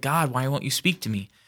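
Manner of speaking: exasperated, frustrated, pleading tone. Retelling an unanswered prayer: imitating own frustrated prayer. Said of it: "I got more and more frustrated".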